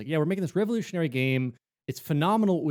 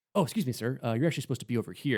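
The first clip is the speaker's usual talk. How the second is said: mock very polite, apologetic, nicest possible manner; 4 dB quieter than usual. Acting out someone politely escorting an escaped lion back: imitating a very polite escort. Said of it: "the nicest way to say that".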